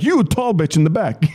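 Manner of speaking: play-acted, high, mild shout. Retelling a show where they yelled at the crowd: imitating yelling at the crowd. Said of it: "I started pointing people out".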